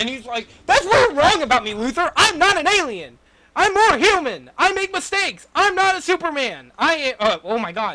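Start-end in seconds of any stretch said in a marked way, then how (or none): 0.7-7.2 very high, loud, fervent heroic yell. Acting out a film scene where Superman yells back: imitating Superman yelling. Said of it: "that scene where he yells at".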